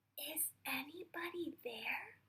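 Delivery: softest, barely-there, hushed voice. Reading a story aloud, a bear calling into a dark cave: softest voice. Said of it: "with his softest voice he said".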